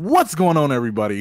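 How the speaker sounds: loud energetic hype.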